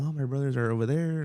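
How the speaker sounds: plain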